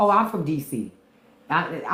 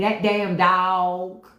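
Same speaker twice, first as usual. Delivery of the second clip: Southern drawl, dog long and drawn out; 3 semitones higher than usual. Speaker imitating how their family used to say it, southern way of saying it. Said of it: "That's how they say it down south".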